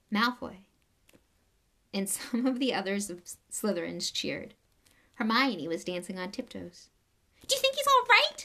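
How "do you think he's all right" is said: quick, high-pitched squeal. Narrator reads a girl asking after a man blasted off the stage, squealing. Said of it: "She squealed through her fingers".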